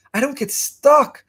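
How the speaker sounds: STUCK stressed, rising, high and slow.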